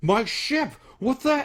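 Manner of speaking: loud, very high, furious, angry shriek. Game narrator voicing a character whose ship takes on water; angry screaming out loud. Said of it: "he like screams out loud".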